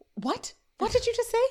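mock shocked gasp, very high. Acting out a man's reply to Amy's remark about the Phillies, retelling a gasp. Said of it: "He gasps".

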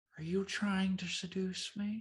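soft, quiet, high-pitched delivery. Quoting a line after the other speaker wishes for her voice: Jennifer Coolidge voice. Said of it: "I wish I could do her voice".

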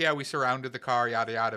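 play-acted casual, offhand, nonchalant delivery. Retelling how he described an arrest in the courtroom: imitating a nonchalant tone. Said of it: "very nonchalantly".

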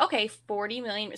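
ordinary delivery

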